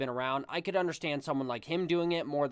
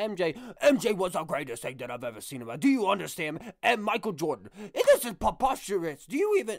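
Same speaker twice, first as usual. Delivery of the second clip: put-on outraged ranting voice, higher pitched; 4 semitones higher, 5 dB louder than usual. Mocking how he reacts to Michael Jordan's name, as Stephen A. Smith losing his mind. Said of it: "he just loses his mind".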